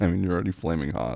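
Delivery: ordinary delivery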